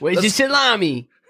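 put-on Chicago accent. Going through a ranking of accents, asked to do chicago, chicago accent. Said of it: "Can we do a Chicago accent?".

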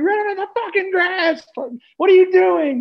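put-on, very high, shrill, loud scream. Retelling what was shouted during a race: retelling own past scream. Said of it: "I was screaming it".

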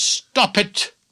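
loud, commanding voice. Retelling the chief counselor stopping him from behind: imitating a loud voice. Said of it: "voice said to me in a loud voice".

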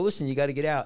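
plain

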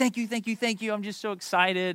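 put-on high, gushing outburst of an overjoyed child. Retelling how the daughter thanked her uncle on FaceTime: imitating a child flipping out with excitement. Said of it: "My daughter is flipping out".

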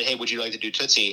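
ordinary talk, nothing marked

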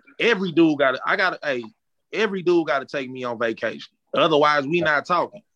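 ordinary talk

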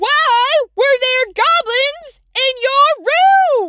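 loud hollered yell, drawn out. Repeating the question to an old character who didn't hear it, yelling. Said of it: "What are you yelling for?".

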